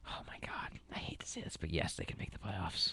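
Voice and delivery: very quiet, reluctant whisper. Asked if the New York Jets can make the playoffs, whispering. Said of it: "I'm whispering it".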